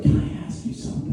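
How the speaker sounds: soft, low, hushed whisper. Retelling how the visiting father asked a question, retelling a whisper. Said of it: "Why are you whispering?".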